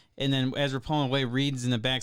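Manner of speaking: ordinary talk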